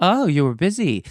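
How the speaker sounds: put-on Polish accent. Retelling a woman's reply about a rescheduled appointment, broken English Polish accent. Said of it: "This is in a broken English accent, truly Polish".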